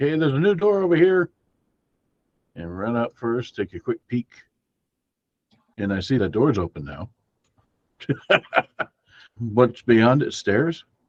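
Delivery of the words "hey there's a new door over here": high, loud yell. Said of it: "I yell back".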